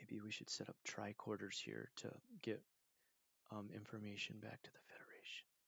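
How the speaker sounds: very quiet near-whisper, under the breath. Describing a tabletop player who kept staring at his character sheet, imitating his really low talk. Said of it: "that's how he would talk, like really, really low".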